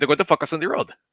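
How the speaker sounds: put-on thick Puerto Rican accent. Retelling a drill briefing by a man from Puerto Rico: imitating a heavy Puerto Rican accent. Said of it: "he has a heavy accent".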